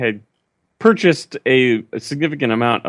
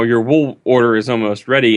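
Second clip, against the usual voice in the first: normal talking voice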